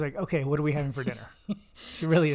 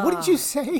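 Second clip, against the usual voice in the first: loud, raised, very high-pitched outburst; 13 semitones higher, 6 dB louder than usual. Imitating a listener named Jessica reacting to a shocking remark: imitating Jessica. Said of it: "for Jessica to hear that and be like".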